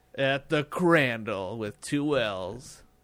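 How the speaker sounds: grand, epic movie-trailer announcer voice. Sharing social media handles with listeners, the speaker gives the name in an epic voice. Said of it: "That's my epic voice".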